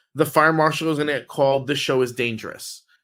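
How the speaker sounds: ordinary talk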